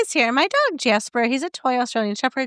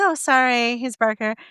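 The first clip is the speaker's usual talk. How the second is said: plain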